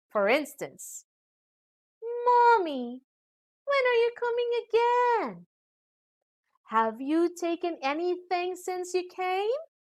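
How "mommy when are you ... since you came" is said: high rising tune with warm interest. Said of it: "questions showing warm personal interest".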